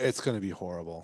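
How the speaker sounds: dripping with sarcasm. Answering a question about how fun drinking bourbon and talking science will be: dripping with sarcasm. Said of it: "I say that dripping in sarcasm".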